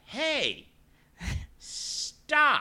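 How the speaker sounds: very high, loud, swooping scream. Retelling telling a customer to stop: imitating own yell. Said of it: "Stop screaming".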